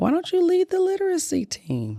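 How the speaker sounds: very high, swooping, sing-song voice. Retelling what the school principal asked: imitating the school principal. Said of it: "Whose voice are you imitating?".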